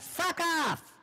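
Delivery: high-pitched voice. Trying out different voices and asking Chad to decide, high-pitched voice. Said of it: "This is my high-pitched voice".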